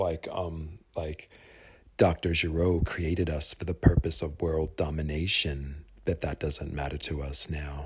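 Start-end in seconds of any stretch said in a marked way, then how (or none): 2.0-7.9 cold, flat, low, emotionless robot monotone. Imitating how a robot character used to talk: cold, low robot voice. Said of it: "he used to talk like very cold".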